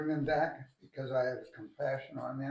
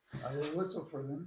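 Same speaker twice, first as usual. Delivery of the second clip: normal talking voice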